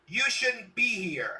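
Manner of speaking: shrill, very high woman's shout. Voicing an NPC woman who yells at the party: woman yelling. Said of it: "this woman yells".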